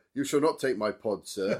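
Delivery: loud, grand, heroic declaiming proclamation voice. Retelling a film scene where a character mimics Thor: imitating Thor's deeper voice. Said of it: "Are you making your voice deeper?".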